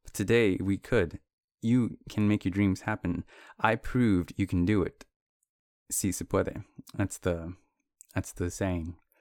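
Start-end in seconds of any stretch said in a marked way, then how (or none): none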